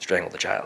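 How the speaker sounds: soft, low whisper. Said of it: "Why are you whispering to me".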